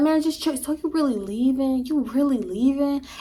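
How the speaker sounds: wheedling, begging, pleading tone. Retelling what a man said when the speaker was leaving, imitating a begging tone. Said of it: "He was doing it in like this begging tone".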